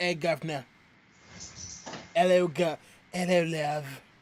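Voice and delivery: loud put-on Cockney accent, dropped h's. Showing what the cockney accent sounds like: put-on cockney accent. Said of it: "Cockney accent, where we sound like".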